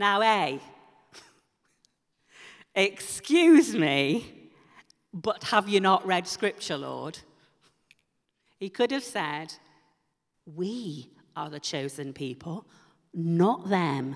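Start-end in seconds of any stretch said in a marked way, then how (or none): 0.2-7.2 very strong put-on Yorkshire accent. Speaker imagining what Peter could have said to the Lord, in a mock Yorkshire accent. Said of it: "I'm sounding very Yorkshire there".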